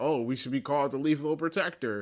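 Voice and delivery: ordinary talk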